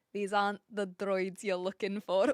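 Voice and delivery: low-pitched, best-try attempted Scottish accent. Trying out movie quotes: attempted Scottish accent. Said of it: "my best attempt at a Scottish accent".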